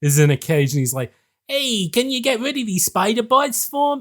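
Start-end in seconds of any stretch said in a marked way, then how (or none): 1.5-4.0 squeaky, very high-pitched nerdy voice. Quoting a caged scientist in the game level: imitating a nerd voice. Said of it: "Do a nerd voice".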